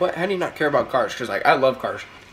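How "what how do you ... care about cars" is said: plain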